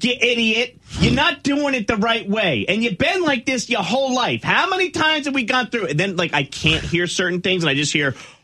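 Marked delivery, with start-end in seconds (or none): 0.0-5.9 put-on high, loud, berating, ranting yell in a New York accent. Retelling a couple's argument from the wife's side: imitating a loud New York wife, Marisa Tomei in My Cousin Vinny. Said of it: "she's like".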